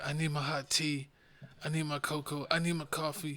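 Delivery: put-on crying. Mocking a sick co-host who was crying for hot drinks: imitating someone crying. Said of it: "this man was crying".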